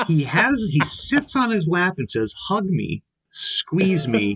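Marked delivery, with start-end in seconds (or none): 2.5-4.4 put-on suggestive voice. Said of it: "In an extremely suggestive tone of voice".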